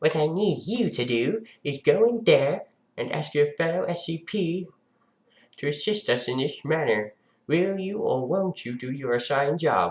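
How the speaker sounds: condescending, talking-down tone. Playing a doctor character in a roleplay, addressing an SCP, condescending. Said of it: "In the condescending again".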